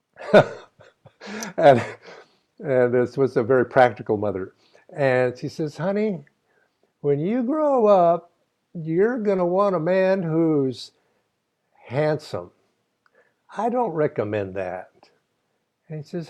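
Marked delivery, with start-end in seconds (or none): 5.8-15.1 put-on, high-pitched Texas accent. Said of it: "say this with a Texas accent".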